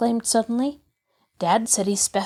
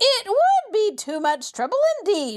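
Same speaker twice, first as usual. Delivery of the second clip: piercing, shrill, very high voice; 10 semitones higher than usual. Reading aloud as the woman refusing the boys' request: shrill voice. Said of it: "she shrilled".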